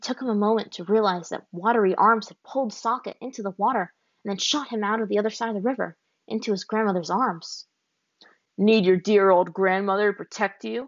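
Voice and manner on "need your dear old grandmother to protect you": taunting, cruel, mocking tone. Narrator reads a man taunting a youth beside his grandmother, taunting with cruelty. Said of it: "Watto taunted, his voice laced with cruelty".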